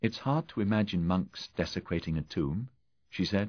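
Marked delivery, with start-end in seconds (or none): none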